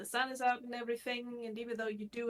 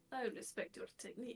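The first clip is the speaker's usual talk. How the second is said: very soft, very quiet whisper; 7 dB quieter than usual. Speaking in character to a shopping companion, said very quietly. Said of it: "Dante very quietly says to her".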